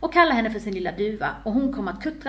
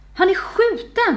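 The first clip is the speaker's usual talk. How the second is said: shocked, horrified cry, very high and loud; 10 semitones higher, 6 dB louder than usual. Louise spots a smoking pistol beneath the wounded man, horrified exclamation. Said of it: "utbrast hon förfärat".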